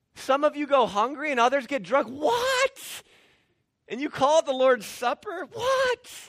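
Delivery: very high, loud, outraged incredulous shriek. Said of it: "It's like".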